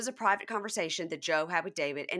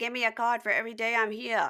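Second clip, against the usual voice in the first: spot-on put-on New Jersey accent; 4 semitones higher than usual. Retelling what was said on Ultimate Girls Trip, put on a spot-on New Jersey accent. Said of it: "New Jersey accent was spot on".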